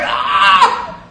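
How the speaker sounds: loud, frustrated yell. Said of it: "I was like".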